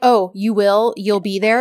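put-on snide, needling, salty, sarcastic tone. Retelling a drama scene's exchange: imitating a salty sarcastic reply. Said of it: "they're both clearly being, uh, salty".

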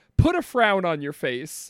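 ordinary delivery

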